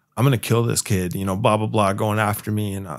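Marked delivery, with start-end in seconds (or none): 0.2-1.2 put-on angry, pissed-off threatening tone. Retelling what the angry dad said: imitating a pissed-off threat. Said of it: "he's all pissed off".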